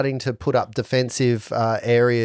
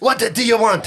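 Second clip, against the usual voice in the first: put-on French accent, very high, lilting and sing-song; 10 semitones higher, 4 dB louder than usual. Voicing an adventurer with a french accent: put-on french accent. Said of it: "accessing French accent".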